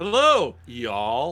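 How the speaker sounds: loud, fake American accent, laid on thick. Greeting listeners after being promised to sound American: put-on American accent. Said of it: "that was a very American".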